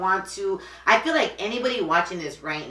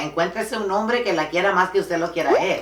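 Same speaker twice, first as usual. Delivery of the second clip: usual speaking voice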